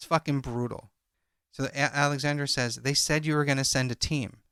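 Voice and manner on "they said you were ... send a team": ordinary talk, nothing marked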